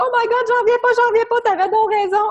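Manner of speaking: shrieking, very high, loud, excited shout. Retelling what a client said when she called: imitating someone shouting. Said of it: "elle m'a appelé en criant".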